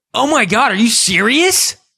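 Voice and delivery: put-on, sudden, shrill shout, pitched way up. Retelling how a cashier reacted at the door: imitating someone shouting. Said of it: "just, like, shouts it in my face".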